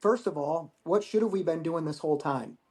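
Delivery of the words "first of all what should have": usual speaking voice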